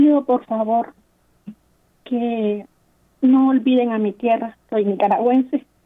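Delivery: choked-up, halting voice, cracking and breaking. Making a petition to the priest, voice breaking. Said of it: "se me quiebra la voz".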